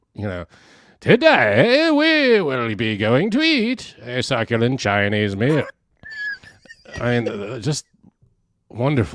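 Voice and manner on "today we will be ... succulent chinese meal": swooping, sinister evil villain narrator voice. Describing a man's way of talking, doing his evil villain narrator voice. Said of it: "evil villain voice or narrator".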